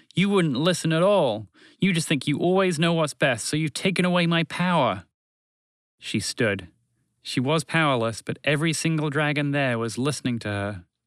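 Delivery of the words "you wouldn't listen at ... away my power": furious, angry outburst in a raised voice. A guardian confronts the one who took away her power, angry raised voice. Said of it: "She raised her voice further with anger".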